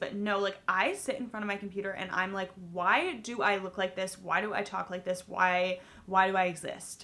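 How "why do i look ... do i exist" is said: normal talking voice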